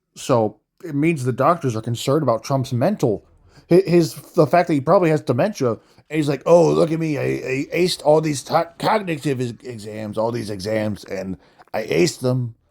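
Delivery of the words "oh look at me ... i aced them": smug, self-congratulating brag, stumbling over words. Mocking a boast about acing cognitive exams: Donald Trump impression.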